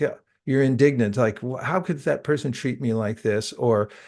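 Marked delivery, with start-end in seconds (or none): none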